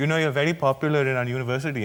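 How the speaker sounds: put-on Indian accent. Retelling what a student said while posing for a photo, in a put-on Indian accent. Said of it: "He's allowed to do that voice?".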